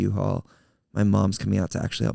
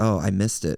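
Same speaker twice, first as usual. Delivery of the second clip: ordinary delivery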